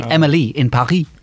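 Paris pronounced with a French accent. Showing how the show title is meant to be said, in a french accent. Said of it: "supposed to be pronounced with a French accent so that Emily and Paris rhyme".

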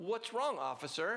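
self-righteous, affronted, indignant tone. Retelling a traffic stop, a lady answers the cop with mock righteous indignation. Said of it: "with this kind of righteous indignation and goes".

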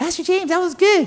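put-on high, fast middle school kid voice. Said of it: "came up to me and said".

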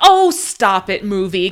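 reenacted put-on yell. Recalling a badly paced movie scene, retelling a yell at a movie. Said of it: "I yelled".

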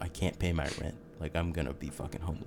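put-on weepy, tearful voice through crying. Retelling what commenters say, imitating someone crying. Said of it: "people just crying, being like".

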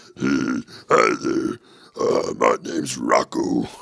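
put-on rocky, gravelly character voice. Playing a voiceover guy named Rocco: put-on gravelly voice. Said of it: "my voice felt like rocks".

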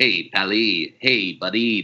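very slow drawl, every word dragged out. Describing a Simpsons episode, speaker does the Charles Bronson voice. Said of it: "distilled down to the Charles Bronson voice".

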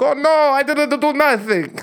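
put-on Italian accent, very high-pitched. Mocking a soccer player denying a foul to the ref: put-on Italian accent. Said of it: "I don't know where that voice came from".

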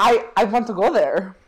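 clumsy put-on German accent slipping into Swedish. Retelling what a man said about the hollow earth: bad impression of him. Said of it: "my bad impression of his".

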